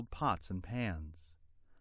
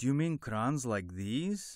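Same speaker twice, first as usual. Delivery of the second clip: ordinary delivery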